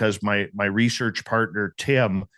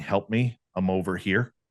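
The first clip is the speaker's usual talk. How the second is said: put-on woman's voice, pleading; 3 dB quieter than usual. Retelling a voice heard trying to lure them into the forest: imitating a woman calling for help. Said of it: "appearing as a woman's voice saying".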